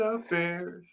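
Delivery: gentle, light, quiet delivery with no bass. Signing off the show by quoting a quarterback: soft Caleb impression. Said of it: "I had to do it like Caleb".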